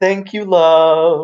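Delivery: sweet calling yell with "love" drawn out. After a glass barely misses his head, he calls into the back, yelling. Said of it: "and then he yells into the back".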